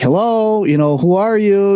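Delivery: mock, high-pitched, carrying shouted call. Retelling calling across the water at night: imitating own yell. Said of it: "I'm yelling across there".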